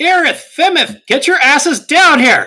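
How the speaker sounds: high, loud, calling yell. Player voicing Kara calling up to Irith and Femith, yelling up. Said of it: "Kara yells up".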